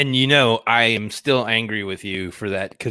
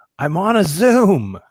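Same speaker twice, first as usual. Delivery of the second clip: put-on scream, higher and louder; 8 semitones higher, 7 dB louder than usual. Retelling how a wife screamed at a child: imitating wife screaming.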